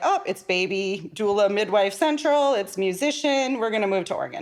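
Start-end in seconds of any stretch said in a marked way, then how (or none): none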